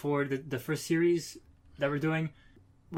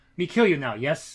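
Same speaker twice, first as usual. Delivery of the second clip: mock, bone-dry delivery with no flourish. Imitating how a comic character talks, ending with yes: dry Death's Head voice. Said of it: "but he says it very dryly".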